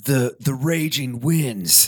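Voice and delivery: intense, fully invested, drawn-out announcer voice. Retelling Bill Paxton's dramatic ride narration: imitating Bill Paxton, very into it. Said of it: "he's so into it".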